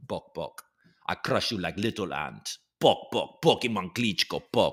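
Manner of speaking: playful, goofy, menacing tough-guy brute voice. Doing the character the speaker plays for the kids: Pokemon Klitschko voice. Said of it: "a character for my kids called Pokemon Klitschko".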